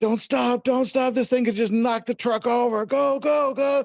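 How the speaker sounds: mock, very high, frantic, panicked shrieking. Retelling what the others in the fleeing truck shouted: imitating people screaming. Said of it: "they're screaming".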